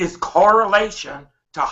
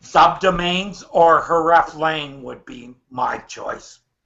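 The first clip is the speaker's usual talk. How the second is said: slow, careful, clearer delivery. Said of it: "Okay, try it again".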